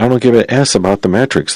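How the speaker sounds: normal talking voice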